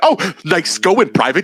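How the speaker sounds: put-on sarcastic voice. Imitating an imagined sarcastic email after losing: imitating a sarcastic message. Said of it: "The sarcastic emails".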